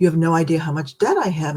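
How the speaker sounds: put-on hushed voice, almost whispering. Retelling how people reveal things to them: imitating someone almost whispering. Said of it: "almost in a whisper".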